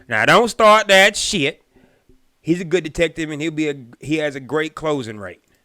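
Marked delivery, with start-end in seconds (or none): 0.1-1.6 very loud, high-pitched put-on country accent. Voicing a man's words, giving him a country accent. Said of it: "I'm giving him a country ass accent".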